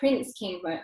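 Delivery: ordinary delivery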